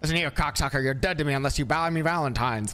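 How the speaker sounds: put-on transatlantic, mid-Atlantic accent. Showing a listener how to phrase it, in a transatlantic accent. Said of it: "I went with a transatlantic accent for you there".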